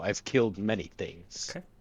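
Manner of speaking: quiet, soft, menacing delivery. A player plants their character's sword and tries to intimidate: the Butcher's intimidating boast. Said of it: "plant the sword in front of me and I go".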